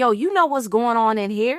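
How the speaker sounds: ordinary delivery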